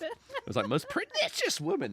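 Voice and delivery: voice breaking and cracking way up high. Recalling a school play with friend Chris, the speaker imitates the actor's voice crack. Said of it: "the actor actor's voice cracked on the first line".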